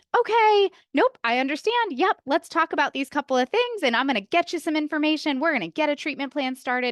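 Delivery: high, relaxed and cheery voice.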